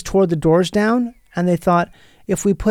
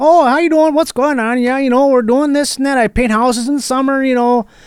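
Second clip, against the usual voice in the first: put-on Minnesota accent, pitched up; 6 semitones higher, 4 dB louder than usual. Retelling how a math teacher greeted students: imitating a Minnesota accent.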